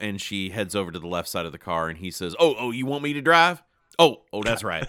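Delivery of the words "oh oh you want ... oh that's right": loud, high, caught-off-guard stammering, fumbling. Retelling a scene where the coach realizes he isn't driving: Sudeikis impression. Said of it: "That's a pretty good imitation of Sudeikis".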